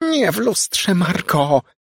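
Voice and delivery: very high, slow moan. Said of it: "jęknęła mała".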